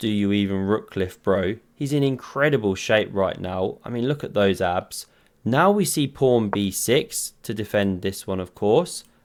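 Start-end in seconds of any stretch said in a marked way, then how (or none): 0.0-1.6 hushed half-whisper under the breath. Joking about a chess player's move, imitating a half-whisper. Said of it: "First he whispers".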